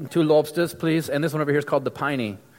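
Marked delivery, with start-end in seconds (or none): 0.1-1.1 terrible, bad, put-on Australian accent. Speaker showing Australian money and ordering with it, in a terrible Australian accent. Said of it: "that's probably a terrible Australian accent".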